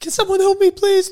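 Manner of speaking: mock very high, very loud, shrill screaming sobs. Retelling a girl bursting in at a petrol station: imitating a panicked crying plea. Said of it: "nearly bawling her eyes out, screaming".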